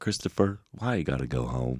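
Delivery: put-on Southern accent, Georgia style. Recalling a girl he once dated from Georgia, he quotes her in a Southern accent. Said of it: "she had the best accent".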